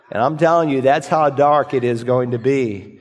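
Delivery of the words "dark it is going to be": ordinary talk, nothing marked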